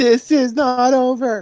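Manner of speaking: little, squeaky, very high-pitched yell. Playing Knuckles as she walks off to the ships, shouting in his tiny voice. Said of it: "Knuckles shout in his tiny voice".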